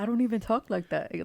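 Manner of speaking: put-on country Irish accent. Teasing the other speaker by repeating their words: imitating a country Irish accent. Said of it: "like exactly how you just said".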